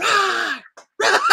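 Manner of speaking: high-pitched loud roaring cry.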